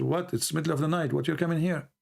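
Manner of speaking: ordinary delivery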